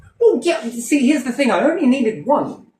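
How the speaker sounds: very high-pitched, defensive, exasperated shouting. Answer the person who is going over the bills with you, shouting. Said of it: "You're shouting".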